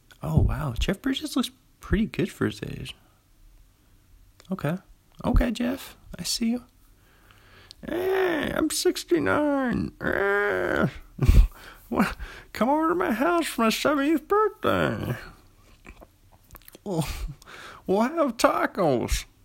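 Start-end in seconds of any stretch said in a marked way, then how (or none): 7.8-19.2 bad put-on old man voice, higher pitched. Doing the impression again after checking the age: bad Jeff Bridges impression. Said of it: "It's terrible, terrible, guys".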